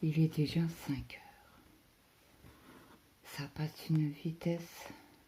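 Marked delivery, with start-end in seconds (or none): 0.0-1.6 breathless, barely voiced. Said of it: "je suis un peu essoufflée".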